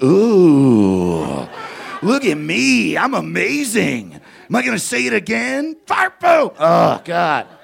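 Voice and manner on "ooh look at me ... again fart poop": put-on high, loud show-off taunting kid voice. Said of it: "just going".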